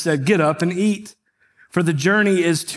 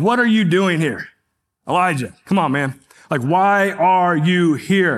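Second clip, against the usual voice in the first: harsh, hard-edged, accusing tone. A speaker shows how the Elijah story is often read, in a harsh accusatory tone. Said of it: "in this very accusatory manner".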